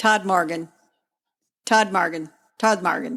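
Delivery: butchered American pronunciation. Naming a place in the United Kingdom, butchering it with an Americanized accent. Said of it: "butcher this with an Americanized accent".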